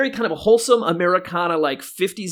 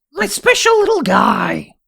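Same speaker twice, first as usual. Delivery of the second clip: put-on croaky, animated cartoon mother voice; 5 semitones higher, 5 dB louder than usual. After asking the other speaker for a Marge impression, echoing it in a Marge Simpson impression. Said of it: "do a great Marge Simpson impression".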